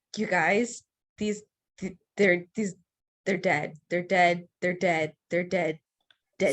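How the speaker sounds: hushed, strained whisper-screaming. Grabbing a companion's shoulder and warning the group, scream-whispering. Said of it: "kind of like scream, whispering".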